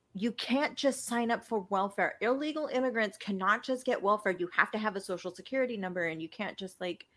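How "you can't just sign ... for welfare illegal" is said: plain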